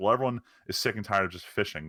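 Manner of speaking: usual speaking voice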